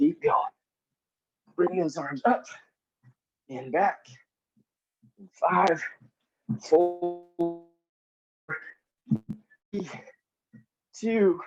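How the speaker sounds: breathing hard, out of breath while talking. Leading an exercise and counting down: breathing hard while talking. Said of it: "You gotta hear me breathe really hard the whole time".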